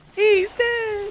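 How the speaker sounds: high, panicked squealing scream.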